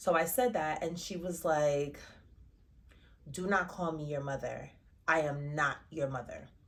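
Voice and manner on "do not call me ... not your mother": mock mean tone, lower pitch. Retelling what a woman said when called her mother: imitating a mean retort. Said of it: "she's so mean about it".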